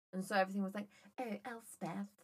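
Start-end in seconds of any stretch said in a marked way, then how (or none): 1.2-2.1 affected, fake upper-class posh delivery. Retelling how a faux posh family said the name: imitating faux posh family. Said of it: "my family were very faux posh".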